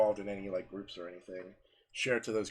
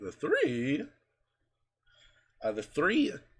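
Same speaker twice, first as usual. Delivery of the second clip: voice breaking on the words, cracking and pitched up; 9 semitones higher, 5 dB louder than usual. Talking through a horse race field, the speaker's voice cracks again. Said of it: "again it cracked again".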